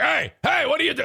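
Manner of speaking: gruff, rough, sharp bark, pitched very high. Retelling how grandpa reacts to the kids climbing: imitating dad barking at kids. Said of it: "he's, like, in their grill".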